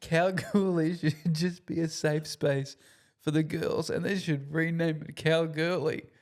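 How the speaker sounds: chuckling, breaking up laughing mid-line. Telling a joke to another speaker, laughing at own joke. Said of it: "I'm already laughing at my own joke".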